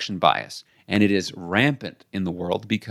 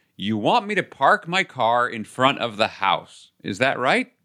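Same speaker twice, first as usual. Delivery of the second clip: mock slow, deliberate, careful, spelled-out delivery; 3 semitones higher than usual. Retelling how a friend asked about parking, imitating a loud voice. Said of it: "she gets this loud voice".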